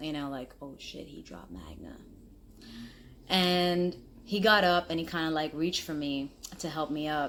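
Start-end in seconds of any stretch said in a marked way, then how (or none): 0.6-2.0 soft, whispered, mumbled aside. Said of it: "I even heard the mumble".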